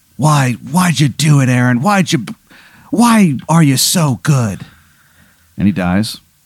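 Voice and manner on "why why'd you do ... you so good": put-on wheezing with a last breath. Acting out a rival who collapses exhausted and dies: wheezing with last breath. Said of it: "he just wheezes out".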